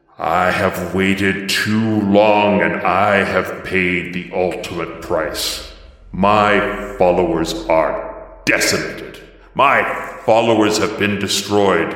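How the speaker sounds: deep, dark, angry voice. Narrating a game scene as the red cloud closes, in Mavros's deep, dark, angry voice. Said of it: "this deep voice that is a blend of Templars and this deeper, darker, angrier voice".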